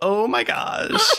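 very high, nervous, giggly, squeaky and nasal. Told to giggle a lot and be really nervous, a performer voices Nika. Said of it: "giggle so a lot and be really nervous".

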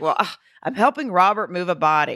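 put-on huffing and puffing, out-of-breath panting. Retelling a phone call where the mother picked up: imitating huffing and puffing. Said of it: "huffing and puffing".

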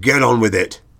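grunted, grunting delivery. Sir David, called for a survey, answers the caller: grunted. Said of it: "he grunted".

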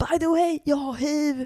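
very angry, slow, deliberately spaced words. Retelling what an ex-boyfriend said after the speaker broke up with him, imitating a very angry ex. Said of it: "så himla arg och sa".

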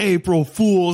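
mock triumphant, high-pitched scream of delight. Retelling how a woman pranked them at the pool, retelling a scream. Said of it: "She's just like screamed".

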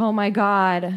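weepy, tearful outburst through sobs. Retelling a tv scene where a woman sees the potatoes: imitating someone crying. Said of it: "she starts crying".

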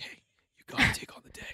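whispered, encouraging, motivational coaching delivery. Imitating self-recorded motivational alarm content: imitating a whisper. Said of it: "starts out whispering at me".

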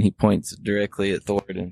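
plain

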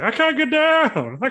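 very high, slow, loud, very drawn-out fat voice. Acting out the wrestler stuck on the top rope, in Cheeks's fat voice. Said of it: "he's got like a fat voice".

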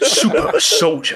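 British soap-opera character voice. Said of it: "that sounded like, um, like Grant from EastEnders".

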